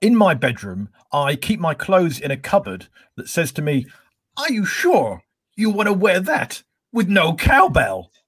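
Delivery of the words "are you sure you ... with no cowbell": high film-star voice, pitch swinging up and around. Panelist, called on next, tells a joke with a Christopher Walken impression. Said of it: "I need to do an impression for this one".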